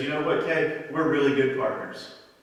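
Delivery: normal talking voice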